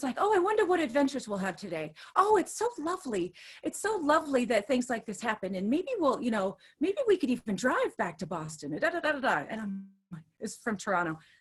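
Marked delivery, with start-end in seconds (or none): 0.2-9.4 put-on, relentlessly positive, sunny, upbeat tone. Retelling what a stranger on a cancelled flight said: imitating a very positive man. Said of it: "he was so positive".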